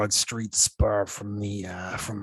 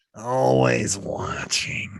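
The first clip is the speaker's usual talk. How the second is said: put-on cartoon monster voice; 3 semitones higher than usual. Playing along after another player says the voice sounds like Monsters, Inc.: Monsters, Inc. character voice. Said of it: "from Monsters, Inc".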